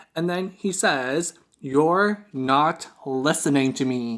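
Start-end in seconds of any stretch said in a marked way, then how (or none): 1.6-4.2 play-acted icy, irritated, very stern tone. Retelling what a man said while explaining their situation, imitating a stern, cold, irritated tone. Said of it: "in a very stern, cold, irritated tone".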